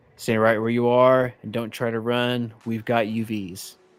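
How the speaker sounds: put-on stern woman's voice, as over a loudspeaker. Narrating a story, voicing an announcement heard over a speaker, imitating a stern woman's voice. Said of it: "stern voice".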